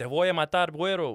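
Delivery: put-on half-strength scream in Spanish. Retelling a cellmate's threat: imitating someone screaming in Spanish. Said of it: "he was screaming".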